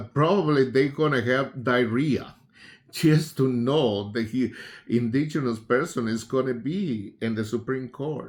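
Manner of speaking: chuckling and laughing through the words. Commenting on a new Supreme Court president, laughing while talking. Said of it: "so sorry for laughing".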